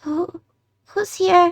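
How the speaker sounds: put-on small child's high voice. Narrating a scene where a dark figure speaks to the players: childlike voice. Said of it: "like a childlike voice".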